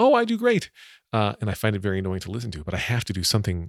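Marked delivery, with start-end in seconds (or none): 0.0-0.7 loud, very high-pitched raised voice. Showing how they voice their own line in a scene, louder voice. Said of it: "I say my line in a louder voice".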